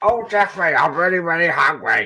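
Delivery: put-on character voice, high and loud. Doing an impression of how Zippy spoke, in a Zippy voice. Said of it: "That's how Zippy spoke. That was my impression of Zippy".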